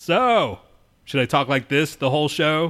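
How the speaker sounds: projecting loudly. Told on the show to speak up, answer in a raised voice. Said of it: "I'm going to raise my voice".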